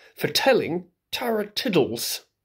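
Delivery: plain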